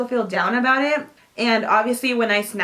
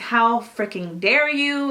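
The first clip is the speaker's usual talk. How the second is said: put-on, slow, furious, angry, full-force telling-off voice. Retelling a friend telling a man off on the phone, retelling an angry telling-off. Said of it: "she just went off".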